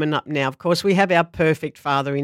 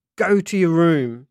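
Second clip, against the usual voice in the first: put-on scary, menacing tone. Comparing how mum and dad discipline, acting out mum in a mock-scary tone. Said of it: "Mum says in a scary tone".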